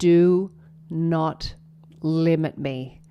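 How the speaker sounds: very slow, deep, rumbling near-growl. Recounting a voice heard to the left, quoting what it said: deep, rumbling voice. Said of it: "it was a deep, rumbling voice".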